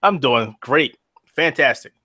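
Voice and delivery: dripping, obviously insincere sarcasm. Answering how things are going after being told not to be honest: sarcastic. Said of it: "I'll just be sarcastic".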